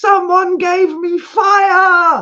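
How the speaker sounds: put-on very high, very loud shrill kid's scream, stretched. Telling how a little boy ran through the picture, imitating a boy screaming. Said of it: "screaming at the top of his voice".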